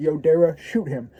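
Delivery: ordinary talk, nothing marked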